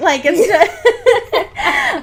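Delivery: high-pitched, laughing delivery.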